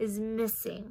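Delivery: ordinary delivery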